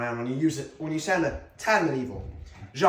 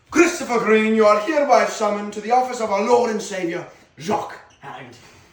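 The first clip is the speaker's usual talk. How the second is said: faux British voice, higher and louder; 6 semitones higher, 6 dB louder than usual. Acting a summons scene in a put-on British accent. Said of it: "Why are you talking like that?".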